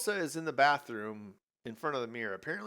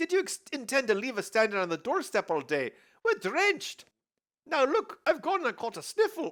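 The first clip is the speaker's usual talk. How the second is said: put-on belted out, high, loud Scottish accent; 12 semitones higher, 5 dB louder than usual. In the costume-change scene, Indiana Jones arrives at a doorstep, in Scottish accent. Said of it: "this is the part where Indiana Jones is the Scottish accent".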